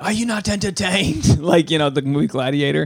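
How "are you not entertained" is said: high-pitched yelling. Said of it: "I just started yelling".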